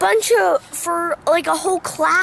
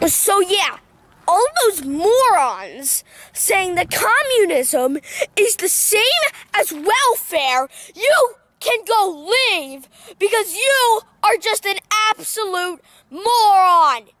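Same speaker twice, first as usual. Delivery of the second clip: worked-up, heated, angry tirade; 2 semitones higher than usual. Telling off the people who disagree with them, heated, angry. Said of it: "I'm sorry I got a little heated".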